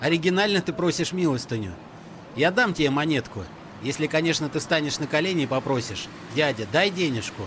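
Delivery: plain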